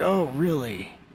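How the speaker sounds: stunned, high-pitched.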